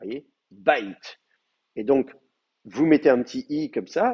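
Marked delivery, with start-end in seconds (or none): 0.5-1.2 bite with the stress on its a. Pronunciation lesson on where the accent falls: stress on the a in bite. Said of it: "l'accent, il est, euh, il est sur le A".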